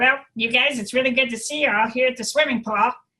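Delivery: adenoid-placed voice, high-pitched and loud. Demonstrating voice placements to listeners, using adenoidal voice placement. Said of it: "go back into the adenoids".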